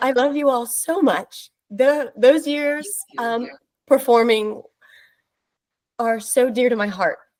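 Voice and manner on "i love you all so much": tearful, emotional, choked up, on verge of tears. Greeting old castmates at a reunion, about to cry. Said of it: "I'm gonna cry".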